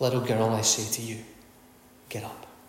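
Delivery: soft and tender, sinking to a whisper.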